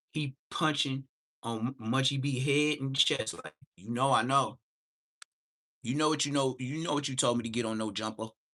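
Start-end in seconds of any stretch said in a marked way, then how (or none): 3.7-8.2 mock forceful, preacher-style delivery with conviction. Imitating someone pressing an accusation on another person, speaking with conviction. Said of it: "just like a preacher say it with conviction".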